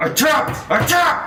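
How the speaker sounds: high, loud yell through gritted teeth.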